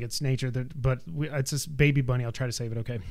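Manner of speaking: plain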